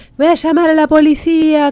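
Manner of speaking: very high-pitched, loud, yelled shout. Retelling how the woman whose terrace caught the smoke began shouting, retelling a woman shouting. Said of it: "Empezó a gritar".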